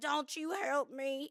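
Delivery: put-on drunk country voice. Retelling what she said to a man helping her up, drunk in country voice. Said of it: "Why do you get like so country when you're dr-".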